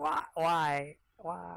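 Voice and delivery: high-pitched voice with words gurgled out. Shot in the neck with a crossbow bolt, Glurdag gurgling before he falls over. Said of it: "he kind of gurgles".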